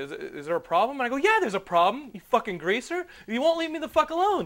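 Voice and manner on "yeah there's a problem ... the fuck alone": mock, very high-pitched, shrill, furious, irate outburst. Recounting a dream where a man kept interrupting his date, retelling an irate outburst. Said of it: "I was so irate in my dream".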